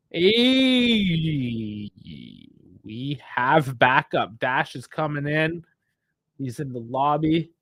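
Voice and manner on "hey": high, long stretched-out "hey". Greeting another speaker who just joined: dragged out "hey". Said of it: "That was the most dragged out "hey"".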